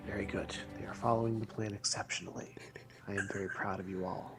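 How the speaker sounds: hushed, very quiet mutter under breath. Speaking in character after three companions vanish from sight: muttered under breath. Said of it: "under my breath".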